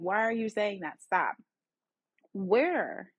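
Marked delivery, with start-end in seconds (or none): none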